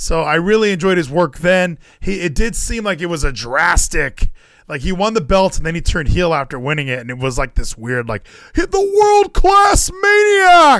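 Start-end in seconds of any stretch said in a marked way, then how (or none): 8.5-10.8 very high, loud, drawn-out raised call. Talking about a wrestler turning heel, doing a Josh Matthews impression. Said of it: "That was my Josh Matthews impression".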